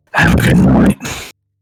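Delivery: very low, deep, rumbling voice. Saying goodnight after being asked to say a line: rumbly Batman voice. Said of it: "I'll do Batman voice".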